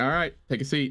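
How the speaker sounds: put-on confronting interviewer voice. Joking about walking upstairs to be met: imitating Chris Hansen. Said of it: "he's gonna be like".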